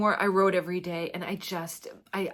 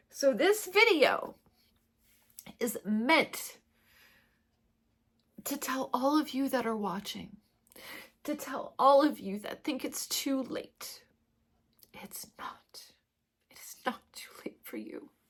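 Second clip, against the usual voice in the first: tearful, crying while talking; 7 semitones higher than usual. Addressing viewers of the video, crying while talking. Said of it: "I didn't think I'd be crying like this".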